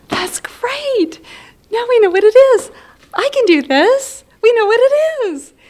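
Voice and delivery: very high acted-out relief. Remembering the doctor saying it was FTD, [name] retells her reaction: retelling her relieved words. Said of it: "we hear the relief in [name]'s voice here".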